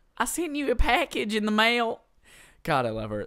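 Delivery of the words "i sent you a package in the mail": put-on sweet Southern-accented voice, higher and louder. Retelling a roommate's mom calling on the phone: imitating sweet southern talk. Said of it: "she talks so sweet".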